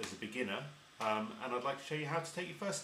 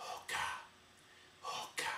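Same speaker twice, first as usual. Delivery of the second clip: soft, breathy whisper, breath only. Showing harmonica learners how to whisper the word: whispering. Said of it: "I'm going to whisper it".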